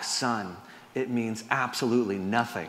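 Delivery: put-on whisper. Telling a joke, voicing a dad answering his son in church: acting out a whisper. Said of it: "the dad whispers back".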